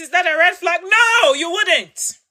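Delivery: heated, fired-up, passionate and emphatic. Speaker addressing listeners, too passionate and yelling now. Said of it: "I'm too passionate and I'm yelling now".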